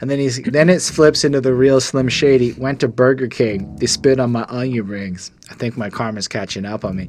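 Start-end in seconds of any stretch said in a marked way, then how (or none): none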